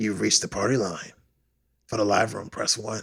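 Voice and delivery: put-on, weird, creepy voice like over a phone line.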